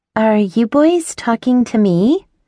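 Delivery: acted ditzy, bubbly, high-pitched bimbo voice. Narrator addresses two men, doing a high bubbly bimbo voice. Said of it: "doing my best bimbo impression. My voice is so high and bubbly".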